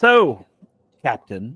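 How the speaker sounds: contemptuous. Voicing a character who greets the player with scorn: scornful Captain, title undeserved. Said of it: "she says "Captain" sort of as if it, you don't deserve the title".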